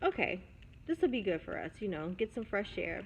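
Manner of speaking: normal talking voice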